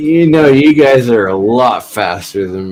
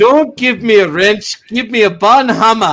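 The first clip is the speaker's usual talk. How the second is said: bad put-on Scottish accent, higher. Joking about a new name for a tool: bad Scottish accent. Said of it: "Was that your attempt at a Scottish accent?".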